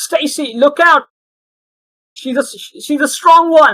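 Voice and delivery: very high, loud shouted yell. Voicing Muffin warning Stacy during an encounter: shouting a warning. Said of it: "Muffin just shouts".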